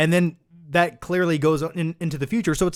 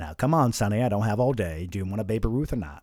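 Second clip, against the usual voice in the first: voice dropped very low; 8 semitones lower, 4 dB quieter than usual. Playing someone handing out Halloween candy to a trick-or-treater: Morgan Freeman impression. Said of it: "Morgan Freeman handing out candy to trick-or-treaters on Halloween impression".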